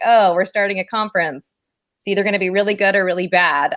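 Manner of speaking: normal talking voice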